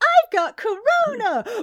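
mock shrill, loud, high-pitched schoolboy shout. Retelling a kid running up and shouting about corona: imitating a kid yelling. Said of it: "one of them goes".

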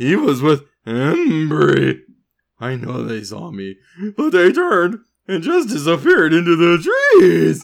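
breaking puberty voice, swooping pitch, one word stretched out. Reading a character's lines aloud from the book: puberty voice. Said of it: "I can't do my puberty voice very long".

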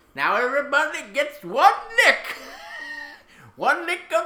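high, strange, creepy, unsettling silly put-on voice. Joking about a man's $7 charity fund, in a strange put-on voice. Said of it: "why that voice?".

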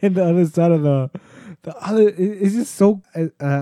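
stumbling words broken up by laughter. Describing a funny, sad speech to a friend, laughing while talking. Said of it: "I'm sorry for laughing".

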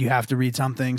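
plain

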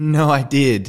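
put-on erratic agitated voice. Retelling how she insisted she had asked for it: imitating erratic insistence. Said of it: "getting kinda er-, erratic".

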